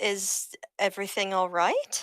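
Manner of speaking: slow, puzzled, confused and worried. Voicing a character asking if everything is fine: confused and concerned. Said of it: "she's just confused and concerned".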